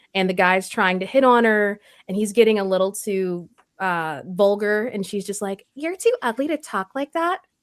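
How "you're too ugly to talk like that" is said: pitched-up blonde bombshell character voice. Recalling a line she played in a game, the speaker does a blonde bombshell character voice. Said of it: "that voice, girl".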